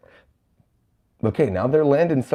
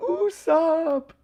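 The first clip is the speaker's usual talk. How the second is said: very high-pitched screaming. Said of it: "you got Nami screaming".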